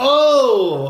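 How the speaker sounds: high, loud sudden exclamation.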